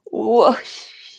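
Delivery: loud, full whoosh exhale. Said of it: "depending on you and your body and your needs".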